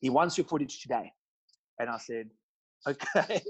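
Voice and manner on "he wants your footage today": put-on heavy, strong South African accent. Speaker quotes their dad passing on a request for footage, imitating dad's south african accent. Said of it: "my dad's got a very South African accent. That's why I put it on".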